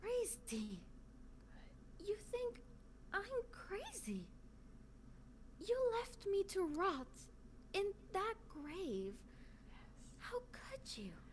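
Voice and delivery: barely there near-whisper, very quiet. An actor retries the line after being asked for almost nothing, almost whispering. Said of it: "Almost so quiet you're whispering".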